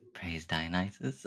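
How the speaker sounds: quiet, soft delivery. Narrating a character who speaks as she walks down the steps, quiet. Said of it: "she just quietly goes".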